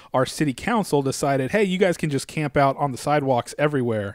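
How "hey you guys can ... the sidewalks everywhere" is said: usual speaking voice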